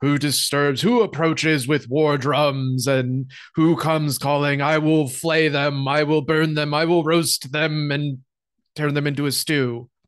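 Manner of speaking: threatening, fearsome dragon voice. Narrator voices a goblin mimicking a dragon, goblin's booming dragon imitation. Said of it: "mimic the sort of imitation of a dragon".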